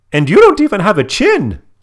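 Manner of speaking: shrill, very high, very loud cry. Retelling a cartoon scene about a treasure chest, doing a Baljeet voice. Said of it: "He's got a very high-pitched voice".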